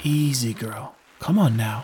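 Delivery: whispered soothingly. Leading his exhausted horse across narrow planks, he speaks to her: whispered soothingly. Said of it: "he whispered soothingly".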